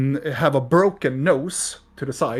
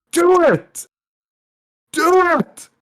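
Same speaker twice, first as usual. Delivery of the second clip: very high-pitched, very slow, drawn-out shouting; 5 dB louder than usual. Voicing a figure in the mirror who urges the player: shouting. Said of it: "he is shouting at you".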